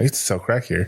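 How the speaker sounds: voice dropped low as a side comment. Retelling a scene from the abridged version: Yuji muttering under his breath. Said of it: "under his breath".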